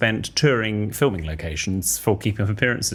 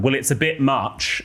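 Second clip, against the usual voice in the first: put-on drawn-out, high childlike voice; 5 semitones higher than usual. Retelling a child's remark at a dress exhibition, imitating Artemis shouting. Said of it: "Artemis shouts out quite loudly".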